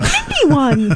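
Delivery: mock little-girl squeal, high and delighted. Recalling squealing on stage when someone they know won, retelling an excited squeal. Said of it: "I squealed like a little girl".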